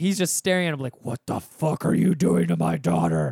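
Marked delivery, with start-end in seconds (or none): 1.0-3.3 furious, rough-edged, confrontational voice. Retelling a dad glaring at someone trapped behind his daughter's seat: imitating a furious dad. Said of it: "the most blazing fucking death glare ever".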